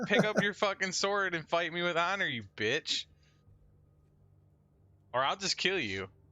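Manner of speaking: high-pitched shouting. A player in a role-playing game speaks in character, yelling at an orc. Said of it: "I'm gonna yell at the fucking mean orc".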